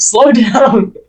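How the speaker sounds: very high, very loud, shrill yell. Voicing crew on another ship heard across the water: yelling. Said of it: "they can hear yelling".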